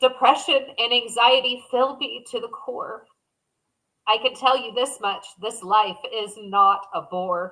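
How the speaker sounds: tearful voice on the verge of crying. Reading a poem about depression and anxiety aloud, near tears. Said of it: "I'm going to cry".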